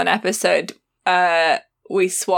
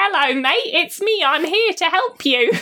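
put-on British accent, pitched very high; 11 semitones higher than usual. Describing Overwatch characters, the speaker imitates Tracer: Tracer's British accent. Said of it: "Tracer's British and she goes".

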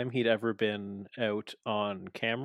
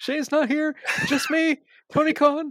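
very high-pitched, loud announcing delivery; 7 dB louder than usual. Imitating Tony Khan talking on the mic in the ring: imitating Tony Khan on the mic. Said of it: "He's like".

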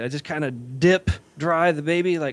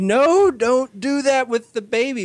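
play-acted high laughing shriek, words barely out; 9 semitones higher, 4 dB louder than usual. Retelling a woman screaming at the speaker over a baby: imitating someone screaming while laughing. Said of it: "She's screaming at me".

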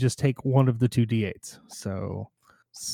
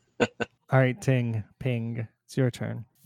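ordinary delivery

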